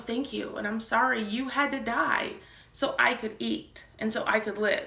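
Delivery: ordinary delivery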